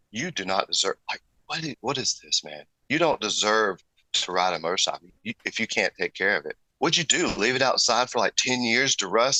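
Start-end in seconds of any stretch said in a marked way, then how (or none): none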